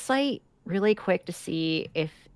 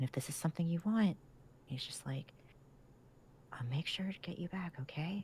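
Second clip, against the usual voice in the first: quiet, soft, hushed whisper; 14 dB quieter than usual. Speaking in character to a horse, promising to come back: whispering. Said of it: "I didn't mean to whisper".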